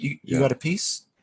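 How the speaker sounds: quiet whispering. Voicing a contact who pulls a player close to ask quietly: whispering. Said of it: "pulls you in to, like, whisper to you".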